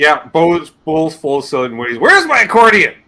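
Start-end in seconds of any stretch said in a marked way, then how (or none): 2.0-2.9 acted, cross, demanding, loud, high angry tone. Describing how Bo talks: imitating Bo's angry tone. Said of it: "he says it with an angry tone".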